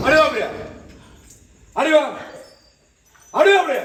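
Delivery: loud, insistent calling-out voice.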